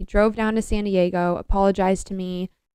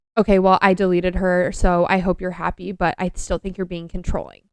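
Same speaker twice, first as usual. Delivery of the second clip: nasty-edged tone, put-on. Retelling an ex's reply at the end of a long call: imitating a nasty tone. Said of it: "in, like, a nasty tone".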